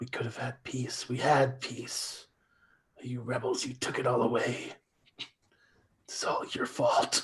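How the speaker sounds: muttering under breath. Playing a character who watches rebels attack, muttering under breath. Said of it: "just mutter under my breath".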